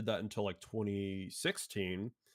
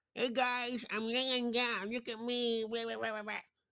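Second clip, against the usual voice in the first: very high, goofy, silly put-on voice. Retelling how they gave him a voice while recording him lying down: stupid mocking voice. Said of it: "do stupid voice like that".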